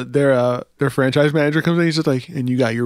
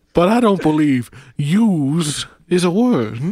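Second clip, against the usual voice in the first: drawling bear voice, Southern; 2 semitones higher than usual. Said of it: "a Southern bear with a droll".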